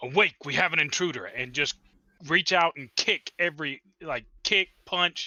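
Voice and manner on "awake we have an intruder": sudden, fast, startled voice. A player's character wakes the sleeping party about an intruder, startled, not overly loud. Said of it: "I'm going to say in a startled voice".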